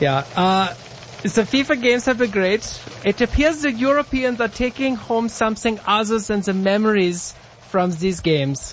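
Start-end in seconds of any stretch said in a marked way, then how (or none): 1.2-8.7 high, put-on German accent. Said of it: "in your German accent for everybody".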